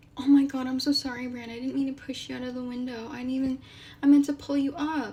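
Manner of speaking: earnest, remorseful, sorry-sounding mock apologetic tone. Imitating Jaime apologizing to Bran, apologetic Jaime parody. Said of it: "Do you think that Jaime being like".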